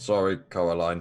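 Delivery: indistinct, run-together mumble. Speaking in character after healing a fallen ally: mumbling. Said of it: "I just kinda mumble".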